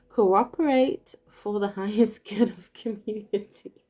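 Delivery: words broken up by giggles throughout. Speaker addressing you guys, giggling while talking. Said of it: "I can't stop giggling".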